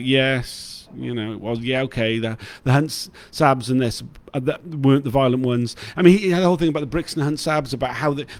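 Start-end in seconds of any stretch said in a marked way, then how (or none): none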